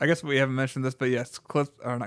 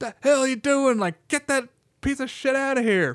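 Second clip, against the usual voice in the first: put-on, very high, confrontational yelling; 12 semitones higher, 4 dB louder than usual. Retelling a movie scene where Rick Dalton yells at intruders: imitating Rick Dalton yelling. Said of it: "just yelling at them".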